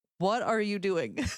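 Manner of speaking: acted high screaming. Recalling watching a show, reenacting screaming at the tv. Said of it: "I was like screaming at the T V".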